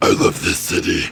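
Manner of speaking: put-on very deep female voice. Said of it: "she's, like, really bassy".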